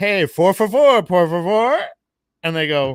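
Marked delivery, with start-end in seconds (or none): 0.0-1.8 put-on buzzed, tipsy voice, loud and drawn out. Retelling ordering at a drive-thru around midnight, imitating being tipsy. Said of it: "kinda lit".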